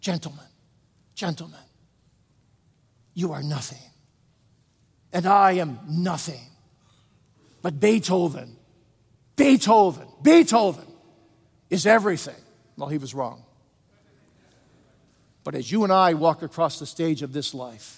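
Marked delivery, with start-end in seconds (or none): 0.0-12.4 put-on raspy whisper. Retelling how Toscanini spoke to his orchestra: imitating a hoarse whisper. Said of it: "he whispered hoarsely".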